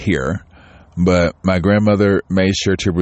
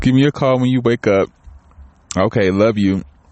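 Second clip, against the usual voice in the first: tearful, crying, words pushed out through tears; 4 semitones higher than usual. Mom leaving a voicemail for her kids, crying, in tears. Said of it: "I'm in tears right now".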